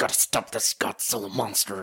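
put-on angry whispering. Mocking a leading man who only whispers angrily, doing a mock angry whisper. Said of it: "You're just whispering and mumbling".

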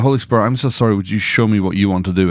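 normal talking voice

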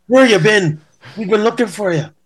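put-on Irish accent, very high-pitched. Retelling how someone greeted the speaker, in an Irish accent. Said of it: "how's my Irish accent?".

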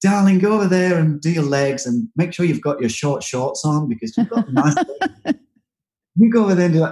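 flamboyantly camp voice. Describing Dreas working with clients, the speaker imitates his camp voice. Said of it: "he's a very camp man".

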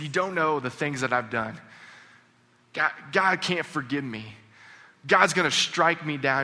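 put-on sobbing, crying-out voice. Retelling a student's words while he knelt sobbing: imitating someone crying out. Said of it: "he's just crying out".

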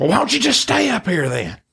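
angry, very high, swooping comeback tone. Telling Joe how Mama reacted to him wanting to stay, imitating Mama getting mad. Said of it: "She got mad".

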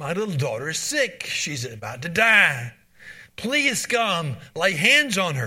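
mock desperate pleading, frantic and urgent. Retelling a worried father's plea to Jesus for his sick daughter, acting out a frantic plea. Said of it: "That's the frantic plea of a desperately worried father".

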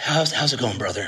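deep, low public-radio host delivery. A speaker imitates guys greeting each other at conferences: NPR radio host voice. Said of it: "It's like this real low voice, like they're an NPR radio host".

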